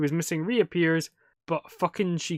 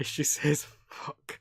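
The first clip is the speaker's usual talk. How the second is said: normal talking voice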